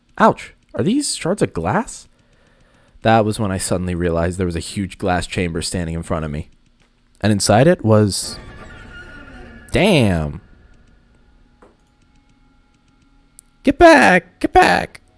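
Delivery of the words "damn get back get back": voice cracking, very drawn out, high and loud. Startled by something inside a glass chamber; voice cracking. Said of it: "that was a voice crack".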